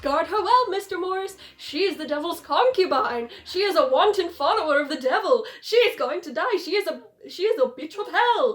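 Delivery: loud, play-acted, wildly overexcited ranting. Retelling a movie scene where Van Helsing warns Mister Morris: overexcited Van Helsing impression. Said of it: "he's so excited".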